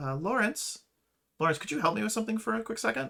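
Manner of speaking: high, lifted, almost cooing, flirty voice. Game narrator voicing Willa calling to a character from behind, Willa's cooing voice. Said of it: "almost cooing kind of voice".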